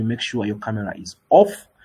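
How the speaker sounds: ordinary talk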